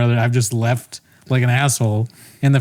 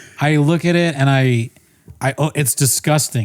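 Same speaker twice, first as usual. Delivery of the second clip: ordinary talk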